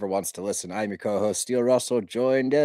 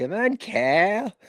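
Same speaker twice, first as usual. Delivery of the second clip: high, exaggerated, pitched-up cartoon voice; 9 semitones higher than usual. Deciding to say a name like Cartman, then doing the Cartman voice. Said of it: "I'm just gonna have to start saying it like Cartman".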